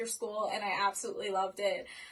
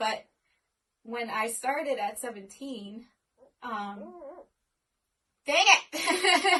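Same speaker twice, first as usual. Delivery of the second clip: holding back tears, choked up and struggling, voice raised; 3 semitones higher, 5 dB louder than usual. Telling your audience about the people who support you, choked up. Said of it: "It's hard not to cry".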